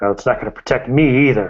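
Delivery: grumbling, complaining tone. In a role-play scene, a man warned about falling from a rooftop replies: grumbling. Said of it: "He grumbles".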